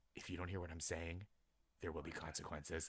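dropped very low in pitch, kept very soft. Speaker imitating a teacher's warning, in a Batman voice. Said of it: "Batman voice".

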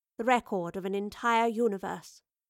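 ordinary delivery, nothing marked

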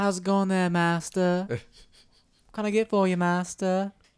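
high-pitched little Southern schoolboy voice. Recalling the animated Clone Wars series, mimicking Anakin in a Southern schoolboy voice. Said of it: "They gave Anakin such a little Southern schoolboy voice".

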